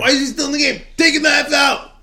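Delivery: play-acted shrill, pitched-way-up, very high furious yell. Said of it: "I was cursing".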